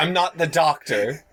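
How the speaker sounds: play-acted irritated, fed-up, pissed-off tone. Retelling a man's pissed-off answer to a fan's question, imitating an angry man. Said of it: "he just gets like all pissed off".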